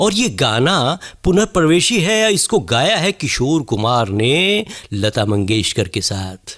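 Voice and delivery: classic radio host announcer voice. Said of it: "उनकी शैली में अगर आप कुछ प्रस्तुत करना चाहें".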